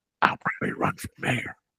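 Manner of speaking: put-on whisper. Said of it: "he has his people whispering".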